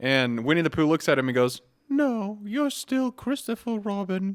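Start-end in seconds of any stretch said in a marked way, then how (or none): 1.9-4.4 very high, soft, slow voice. Retelling a movie scene, answer Christopher Robin's question in a Winnie the Pooh impression. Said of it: "I did that impression".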